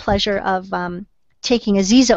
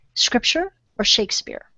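soft whisper, close into the ear; 3 semitones higher, 5 dB quieter than usual. Retelling how Lucas walked up and asked a question: imitating Lucas whispering. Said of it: "he kinda whispered in my ear and he said".

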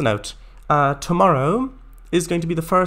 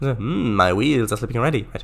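ordinary talk, nothing marked

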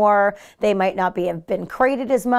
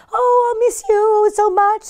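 very high, drawn-out squeaky voice; 13 semitones higher, 4 dB louder than usual. Speaker shows what owners say when leaving their dog, in a high squeaky voice. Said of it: "and the high squeaky voice that we do".

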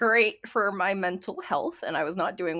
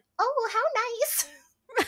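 imitated very high, sweet good-witch voice. Imitating mom, compared to Glinda the Good Witch: Glinda the Good Witch voice. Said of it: "my mom is like Glinda the Good Witch from The Wizard of Oz".

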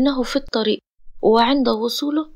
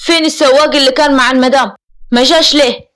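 irate, angry, demanding tone; 2 semitones higher, 7 dB louder than usual. A man shouts for his guards, then questions them, angry. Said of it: "ثم تحدث بغضب".

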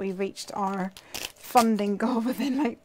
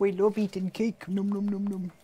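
happy bear character voice. While colouring in a drawn bear, speaking as the bear in a bear voice. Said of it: "That's the voice of the bear".

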